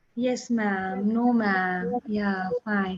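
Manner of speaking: very slow, soft, scared, timid little murmur. A speaker shows how Shri Lakshmi answered, imitating Shri Lakshmi's slow, low voice. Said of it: "speaking very slowly, in a very low voice".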